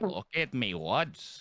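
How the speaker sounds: put-on, exaggerated Canadian accent. Mocking how a friend talked in his outdoor video: imitating Chatty's ultra Canadian voice. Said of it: "why are you going ultra Canadian?".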